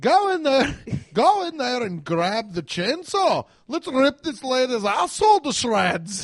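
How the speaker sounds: loud, animated, swooping put-on Scottish accent. Asked to do it again, trying out a scottish accent. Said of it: "Scottish in the books".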